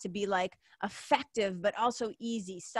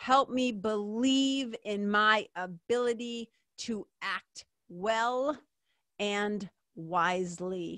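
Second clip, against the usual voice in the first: slow, unhurried, measured, deliberate reading aloud. Speaker shares a prayer with listeners and reads it aloud: reading slowly. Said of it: "I'll read it slow".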